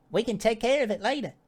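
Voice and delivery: tiny, squeaky, very high little creature voice. Voicing the spider replying to a question, in a tiny small voice. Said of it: "small, small voice comes from the spider".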